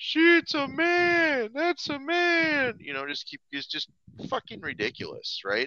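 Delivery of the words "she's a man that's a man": put-on very high, very slow, drawn-out drunken yell. Retelling what a drunken fan kept yelling at a show: imitating a drunk man yelling. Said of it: "this guy's just yelling out".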